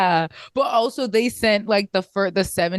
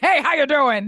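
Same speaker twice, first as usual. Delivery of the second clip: overly rough voice, pitched up; 6 semitones higher than usual. Imitating an uncle who is too rough when he says hello. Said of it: "uncle that's too rough when he says hello".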